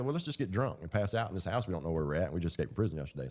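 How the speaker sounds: ordinary talk, nothing marked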